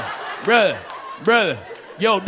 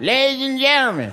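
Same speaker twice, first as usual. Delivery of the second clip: pitched-up panhandler's announcing voice; 5 semitones higher than usual. Describing beggars who address passengers as train doors open, subway beggar's announcing voice. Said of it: "You hear the voice when the doors slide open".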